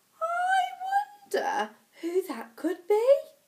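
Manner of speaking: very high, sing-song, storybook motherly voice. Reading a children's story aloud, voicing the little girl's mummy: mummy's voice. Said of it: "[name]'s mummy said".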